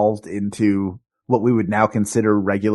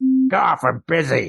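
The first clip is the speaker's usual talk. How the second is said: put-on very slow, rough, creaky grumpy old-man grumble; 4 semitones higher than usual. Acting out an old man on a park bench brushing someone off: imitating a grumpy old man on a bench. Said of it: "he looks at you with a twinkle in his eye and he goes".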